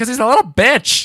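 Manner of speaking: very high, very loud, shrill top-of-the-lungs yell. Retelling answering a kid in line in third grade; retelling a top-of-lungs shout. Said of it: "at the top of my lungs".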